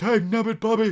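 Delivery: high, loud cartoon-style voice. After noticing you sound like Hank Hill off King of the Hill, do a Hank Hill impression. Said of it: "that was a great impersonation".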